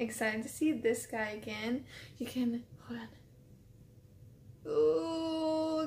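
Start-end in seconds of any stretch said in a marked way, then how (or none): 4.7-5.9 high, teary "ooh" with a catch. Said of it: "gonna cry a little bit".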